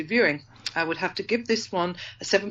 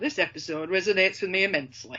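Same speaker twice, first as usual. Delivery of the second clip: real, native Yorkshire accent. Rereading a viewer comment after being urged to: Yorkshire accent. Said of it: "I'll do it again then".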